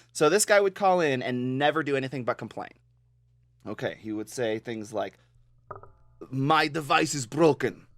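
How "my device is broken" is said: put-on slow, very thick, heavy Russian accent. Retelling a caller who never did anything but complain, in a super thick russian accent. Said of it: "in a super thick Russian accent".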